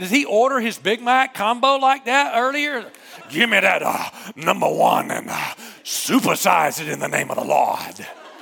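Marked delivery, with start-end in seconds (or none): 3.3-8.1 creaky preacher voice, pulpit-style delivery. Imagining how the preacher ordered his Big Mac combo earlier, in preacher voice. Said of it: "The preacher voices".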